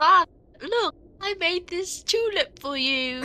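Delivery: put-on British-accented, very high child voice. Reading the child's part of a script with a partner, British accent. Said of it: "Why is she British?".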